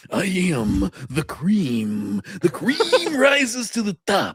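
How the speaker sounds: very high-pitched, slow, swooping, every word stretched. Retelling a famous promo with creamer cups: imitating Macho Man Randy Savage. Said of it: "He's like".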